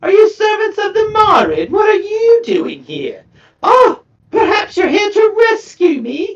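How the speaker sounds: very high, lilting, swooping character voice. A game master voicing a chained figure addressing the party, in a fairly high voice. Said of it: "In a fairly high voice".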